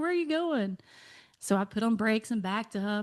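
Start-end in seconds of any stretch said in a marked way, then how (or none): 0.0-0.8 put-on yell, higher pitched. Retelling being called back from a parking lot: imitating Kiefer yelling. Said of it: "he literally yelled".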